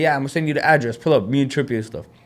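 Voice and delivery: put-on heavy, laid-on, thick Florida accent. Retelling a phone call from a friend: imitating a thick Florida accent. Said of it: "with the biggest Florida accent".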